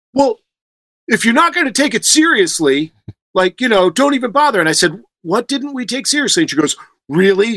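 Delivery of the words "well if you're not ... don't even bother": high, irritated, annoyed scolding tone. Retelling a phone call, the speaker imitates the manager yelling at them angrily. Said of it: "manager angry on phone".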